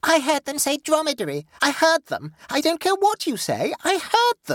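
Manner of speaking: piercing high-pitched squeal. Narrator reads Dolores answering Rollo and the others, squealing. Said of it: "squealed the odious Dolores".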